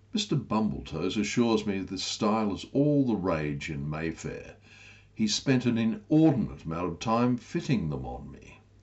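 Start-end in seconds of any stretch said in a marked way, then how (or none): none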